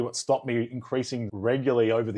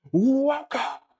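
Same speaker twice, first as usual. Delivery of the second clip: mock shouted delivery, higher and louder; 14 semitones higher, 4 dB louder than usual. Retelling how the old podcast used to open: imitating own past yelled welcome. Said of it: "I'm not allowed to yell".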